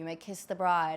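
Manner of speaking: low, flat, expressionless deadpan priest monotone. Telling of a wedding where the priest spoke without warning, imitating a monotone priest. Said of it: "in the most monotone".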